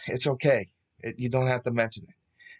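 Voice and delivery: ordinary delivery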